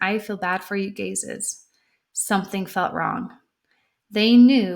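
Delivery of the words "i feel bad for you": normal talking voice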